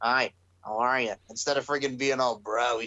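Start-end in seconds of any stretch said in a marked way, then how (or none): 0.0-1.1 slow, boring, dull delivery. Comparing a wrestler to Squidward after getting knocked out: boring Squidward voice. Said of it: "he's friggin' changed and he's all boring".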